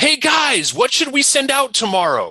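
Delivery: very high, carrying yell. Retelling how a client asked his team for content: imitating a client yelling. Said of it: "he leans back in his chair and he yells".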